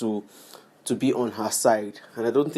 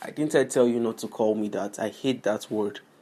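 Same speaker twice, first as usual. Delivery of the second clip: plain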